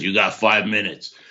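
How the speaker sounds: put-on mean, serious voice. Retelling a phone call where Jack first answers, imitating Jack's mean voice. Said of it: "kind of in a mean voice, a real serious voice".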